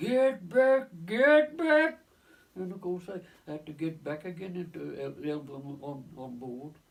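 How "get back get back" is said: very high, very loud, drawn-out shout. Retelling the captain shouting from the bridge above: imitating someone shouting. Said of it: "he shouted".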